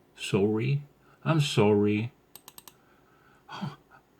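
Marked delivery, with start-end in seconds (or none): 0.2-0.8 Canadian-style pronunciation, quieter. Showing how Canadians say the word sorry: Canadian accent. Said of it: "They say sorry".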